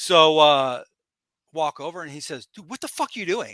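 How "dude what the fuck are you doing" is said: put-on angry, rattled off fast and hushed. Retelling how a veteran wrestler called him over, imitating an angry wrestler. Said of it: "like he's mad".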